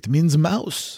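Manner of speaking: terrible put-on French accent. Retelling a man's answer about what a French word means, in Geoffroy's terrible French accent. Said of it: "in his French accent".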